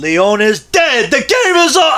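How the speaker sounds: voice breaking, very high-pitched. Speaker showing a VHS tape that belonged to Grandma: voice cracking. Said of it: "I don't know why my voice cracked".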